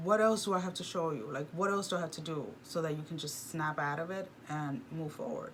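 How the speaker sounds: normal talking voice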